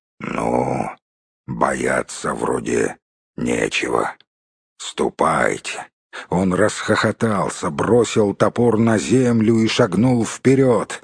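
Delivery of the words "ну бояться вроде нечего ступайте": deep, very low rumbling voice. A man leaning on a huge axe speaks to his horses: low rumbling voice. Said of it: "проговорил человек низким ракочущим голосом".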